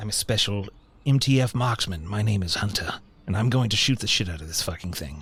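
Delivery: put-on, attempted British accent. Introducing his game character, a player tries a British accent. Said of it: "Let's see if I can do a British accent".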